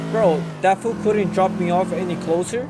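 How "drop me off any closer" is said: ordinary talk, nothing marked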